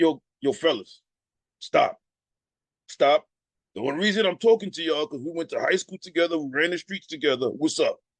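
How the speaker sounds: low, deep voice. Retelling recruiting Dave, a high school friend, imitating Dave's deep voice. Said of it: "That was his voice. Everybody know Dave had this deep voice".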